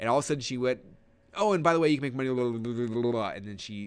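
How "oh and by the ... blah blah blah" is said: jittery, nervous, rushed, rattled-off mumble. Retelling a speaker's sudden move to selling, imitating nervous, fast, mumbling talk. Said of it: "she starts talking faster, and she starts getting nervous".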